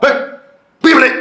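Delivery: furious scolding yell.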